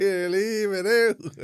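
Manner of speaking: very slow, loud, high, stretched-out yell. Recounting a clip of a woman shouting at a lad in a fight: retelling a shout. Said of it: "she shouted at the other lad".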